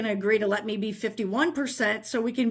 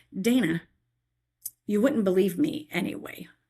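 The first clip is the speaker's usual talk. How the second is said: whispered; 2 semitones lower than usual. Retelling what God whispered to her: whispering as God. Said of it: "I heard God whisper to me".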